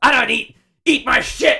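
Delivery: high-pitched yelling wrestler voice. Imitating a wrestler's yelled promo line: Bron Breakker impression. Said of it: "do you like my Braun Breaker?".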